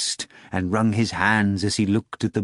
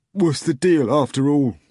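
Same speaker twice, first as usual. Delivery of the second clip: resentful, bitter, insistent tone, pitched up; 5 semitones higher, 4 dB louder than usual. A narrator reads a man in a clinic room demanding an answer, bitter demand. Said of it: "Nikanor Ivanovich demanded bitterly".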